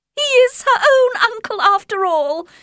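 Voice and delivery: joyful, very high, happy exclamation. Reading Mrs. Bennet's reply to her family's worries, crying out happily. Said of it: "she cried happily".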